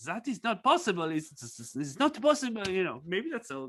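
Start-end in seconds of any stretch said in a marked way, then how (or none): 0.1-2.7 put-on sing-song Alsatian French accent. Retelling what a man told them, Alsace French accent. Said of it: "it's a French accent, but anyway, maybe Alsace, an Alsace accent".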